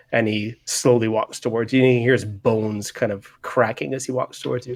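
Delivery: normal talking voice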